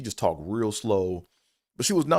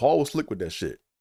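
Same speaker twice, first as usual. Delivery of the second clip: plain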